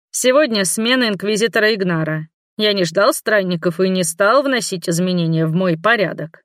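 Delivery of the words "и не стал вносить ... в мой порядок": ordinary delivery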